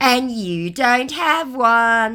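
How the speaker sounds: very slow mocking tone. Retelling a scammer's reply to a jab: imitating a mocking tone. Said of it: "he mocked me".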